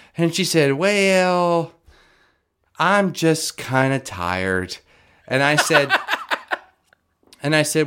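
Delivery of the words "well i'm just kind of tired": put-on Southern belle voice. Retelling Shyla's answer to going outside, imitating Shyla, Southern belle accent. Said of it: "She is very much a Southern Belle right now".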